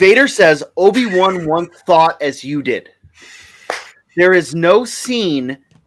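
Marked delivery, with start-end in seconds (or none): none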